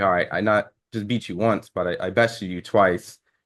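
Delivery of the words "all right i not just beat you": plain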